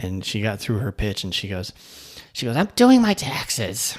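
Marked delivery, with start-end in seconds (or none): 2.5-3.9 put-on high, slow, grouchy old lady voice. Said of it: "one kinda grouchy old lady".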